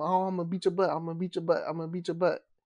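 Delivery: plain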